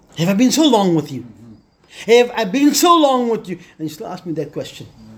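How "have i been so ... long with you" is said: mock exasperated, loud, swooping, frustrated plea. A preacher acts out a reply from a sermon story, retelling a frustrated reply. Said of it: "I can hear the frustration in His voice".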